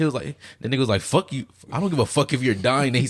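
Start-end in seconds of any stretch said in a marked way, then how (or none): 1.0-2.9 angry, dismissive tone. Retelling a character's words to a dying god: imitating an angry tone. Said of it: "an angry tone".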